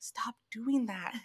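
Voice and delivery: put-on whisper. Retelling what the boyfriend's brother whispered: imitating someone whispering. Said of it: "he would whisper".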